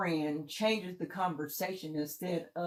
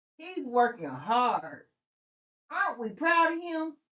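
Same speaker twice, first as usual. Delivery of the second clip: put-on high-pitched old granny voice; 5 semitones higher, 4 dB louder than usual. Quoting someone in the family about a young cousin, in an old granny voice. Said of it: "he sounded like an old granny".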